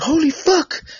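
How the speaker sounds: mock excited reaction. Recalling hearing a guest's accent: retelling an excited reaction. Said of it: "and I was all excited".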